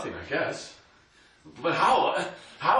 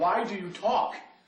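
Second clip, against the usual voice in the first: ordinary delivery, nothing marked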